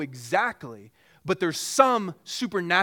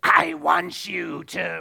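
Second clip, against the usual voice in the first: gravelly, creaky demon voice; 4 dB louder than usual. Showing the audience how Satan might speak to kids, in a Satan voice. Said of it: "it's my best Satan voice".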